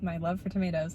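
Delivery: dry, ironic, sarcastic tone.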